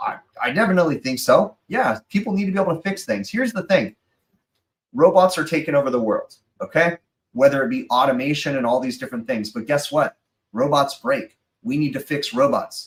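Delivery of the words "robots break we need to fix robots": playful, simple caveman-style speech. Answering questions from the chat: mock caveman talk. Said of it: "I'm talking like a caveman".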